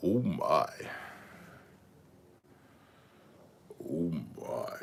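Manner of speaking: bottom-of-the-range bass, deepest possible, very low voice. Answering a host's request to speak as low as possible, voice dropped as low as possible. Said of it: "drop your voice as low as possible".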